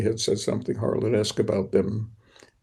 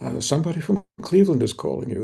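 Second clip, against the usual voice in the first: awestruck, pitched-up delivery; 5 semitones higher than usual. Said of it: "my father came in awed and said".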